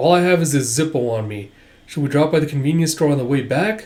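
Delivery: ordinary talk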